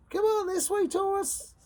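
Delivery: very high-pitched, squeaky cartoon voice. Voicing the universe during a Taurus reading, in a Mickey Mouse voice. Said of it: "Was that a Mickey Mouse impression?".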